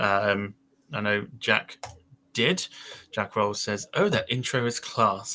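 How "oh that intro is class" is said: put-on, heavily posh accent. A host reads out a viewer's chat comment about the new intro in a very posh accent. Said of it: "I'd had to say that in a very posh accent".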